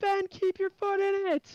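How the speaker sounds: shrill, very high-pitched screaming. Retelling what was yelled at a teammate during the race: retelling a scream. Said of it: "I'm just screaming".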